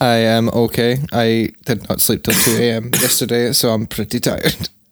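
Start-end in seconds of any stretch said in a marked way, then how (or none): 0.0-1.0 level, flat, machine-like robotic monotone. Answering how they are doing, robotic monotone. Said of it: "Sounded like a robot there".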